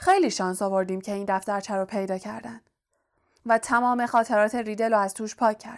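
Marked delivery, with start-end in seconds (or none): none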